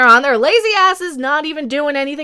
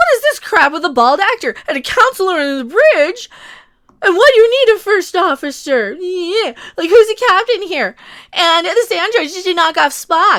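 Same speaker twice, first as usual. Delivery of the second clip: play-acted, ranting, temper-tantrum delivery; 4 semitones higher than usual. Imitating a critic of the show throwing a temper tantrum. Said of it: "throwing a temper tantrum".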